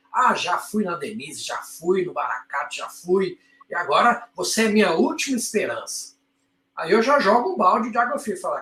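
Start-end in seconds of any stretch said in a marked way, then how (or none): 0.1-6.1 mock self-satisfied, proud, boastful bragging. Retelling what a patient said, imitating a patient saying it proudly. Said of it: "que falou de boca cheia".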